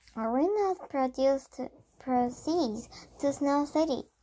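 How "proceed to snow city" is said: plain reading voice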